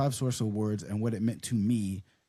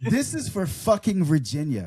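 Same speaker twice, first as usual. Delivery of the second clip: put-on woman's voice, higher and louder; 5 semitones higher, 4 dB louder than usual. Reading aloud an acceptance speech after being urged: imitating Steph's voice. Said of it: "you're expecting I'm gonna read it in her voice?".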